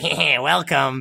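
put-on announcer voice. Play the announcer at Castle Badfellas welcoming people, as a Ray Liotta impression. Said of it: "Ray Liotta's like".

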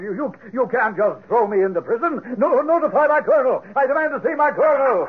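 high-pitched shouting. An arrested lieutenant objects to the officers arresting him, shouting in protest. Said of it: "stop the shouting".

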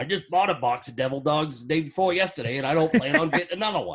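grumbling, grumpy, angry dad voice with Maine accent. Doing the character bit of the angry Maine dad: Donnie voice, grumpy Maine dad. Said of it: "Donnie, the angry Maine dad".

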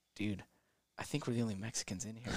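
low mutter under breath. Retelling what a companion said during their meal, retold mutter under his breath. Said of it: "Like kinda under his breath".

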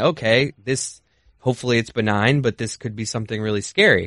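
ordinary talk

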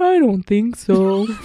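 loud, slow, goofy put-on clown voice. Reenacting the answer when asked for a name, in a clown voice. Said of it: "But I said it in a clown voice".

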